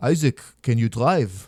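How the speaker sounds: Israeli accent, attempted as well as possible. Retelling a friend's phone call, doing your best Israeli accent impression. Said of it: "I'm going to do my best uh, Israeli accent impression".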